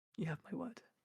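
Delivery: hushed half-whisper with no voice. Voicing a character replying tenderly in a scene: half-whisper. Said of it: "kinda whispers back".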